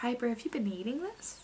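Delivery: tender, careful, soft. Retelling what mom asked: imitating someone asking gently. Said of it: "tries to really gently ask me".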